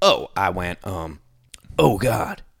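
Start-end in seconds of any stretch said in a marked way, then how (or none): 1.8-2.4 mock muttering under the breath. Retelling waking up as a man dug a hole: imitating muttering under breath. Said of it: "very under my breath".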